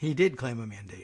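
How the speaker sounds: low, hushed, documentary-style narrator voice. Speaker cuts into political talk to correct a point, narrator voice. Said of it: "Narrator voice".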